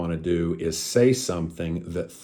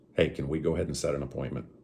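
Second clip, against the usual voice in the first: downward inflection on appointment; 3 semitones lower, 6 dB quieter than usual. Teaching tone on a question about setting an appointment: falling at the end on appointment. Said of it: "the right way to do it. ... So downward inflection".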